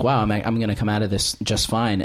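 ordinary talk

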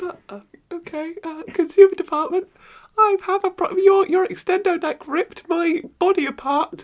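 high, squeaky voice.

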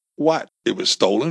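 plain

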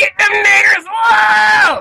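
put-on wild, very high, drawn-out shrieking scream. Retelling what was screamed at people walking by: imitating own past loud scream. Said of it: "Screaming really loud".

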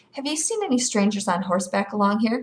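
ordinary talk

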